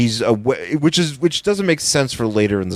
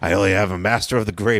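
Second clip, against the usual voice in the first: put-on creepy voice, much lower; 3 semitones lower than usual. Retelling a scene where a character chugs wine at a table; imitating Pip, creepily. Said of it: "Which he says really creepily".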